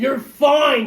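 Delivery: acted-out exasperated, angry yell, very high and loud. Retelling how another speaker answered a question: imitating someone yelling angrily. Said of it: "She was getting mad at me".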